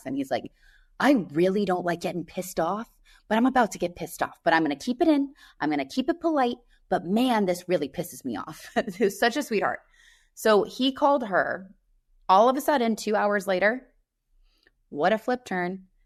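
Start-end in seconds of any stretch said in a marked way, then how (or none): 1.0-8.7 put-on thick New York Italian accent. Retelling what an upset man said, in his Italian New York accent. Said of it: "with his like Italian New York accent".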